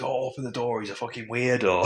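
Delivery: loud, high-pitched shout.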